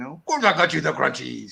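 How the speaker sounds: put-on voice with a Scottish-sounding accent. Retelling a film scene, doing an Arnold impression that sounds like Scottish Santa. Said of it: "Why do you sound like Scottish Santa".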